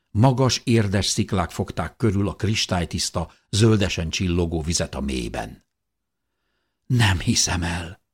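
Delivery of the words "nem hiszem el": whispering, slower. The narrator sees an underground lake below the rocks, whispering.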